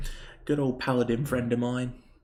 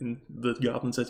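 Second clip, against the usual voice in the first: usual speaking voice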